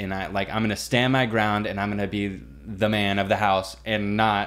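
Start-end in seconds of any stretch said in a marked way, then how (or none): none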